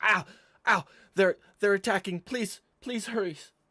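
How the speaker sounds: very loud, shrill, high, rushed, panicked, pained screams. Voicing a boy attacked by eels in muck: screaming in pain and panic. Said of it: "He screams out".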